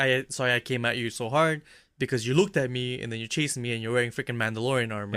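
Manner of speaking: plain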